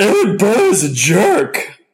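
high, swooping pitch with slow delivery. Introducing himself as the special guest Hamilton: Hamilton voice. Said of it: "I've been practicing my Hamilton".

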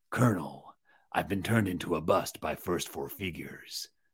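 deep, very low, quiet murmur. Presenter showing a bust of a game soldier speaks as the figure, Solid Snake voice. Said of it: "my Solid Snake voice is really good".

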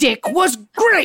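fake accent heard as Scottish. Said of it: "Why are you speaking in a Scottish accent?".

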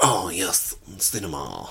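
mock French accent. Recalling the listener's past moment, the speaker quotes them in a mock French accent. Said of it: "And I spoke in a French accent".

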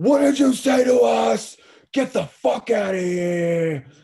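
very high, drawn-out screaming outburst. Retelling how Renee turned on a guy and started screaming: retelling a scream. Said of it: "she just starts screaming at the guy".

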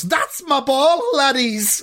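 high, ringing, shouted call. Reading a football story aloud, a player shouts after his volley, shouting. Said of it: "and he volleys it and he shouts".

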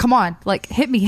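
plain

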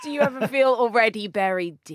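ordinary talk, nothing marked

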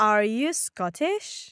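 questioning rising tune at the end on "Scottish". In a language lesson, modeling how to ask a yes-no question, rising at the end. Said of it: "puedes levantar la voz al okay. final".

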